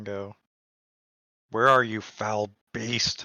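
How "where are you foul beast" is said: screaming. A player's character steps through the door into a beaten-up room, screaming. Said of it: "you scream out this".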